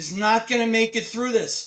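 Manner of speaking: put-on panicked scream. Retelling a wife's reaction to news of early labor: imitating someone yelling in panic. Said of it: "started yelling and screaming".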